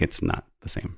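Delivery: whispered, quiet voice.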